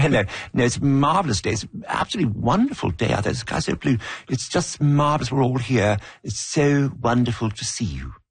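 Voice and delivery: put-on English accent. Retelling how a man in the town could speak, imitating an english accent. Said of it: "speaking with an English accent".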